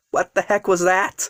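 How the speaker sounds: plain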